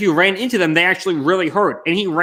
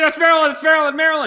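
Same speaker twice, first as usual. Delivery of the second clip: screaming, much higher in pitch; 9 semitones higher than usual. Recalling watching a quiz question alone on the couch, reenacting own screaming. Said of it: "And I start screaming".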